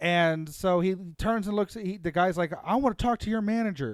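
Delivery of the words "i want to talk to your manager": angry, pitched-up, shouted voice. Retelling what a screaming man at the register demanded, retelling a shouted demand. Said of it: "screaming at the top of his lungs".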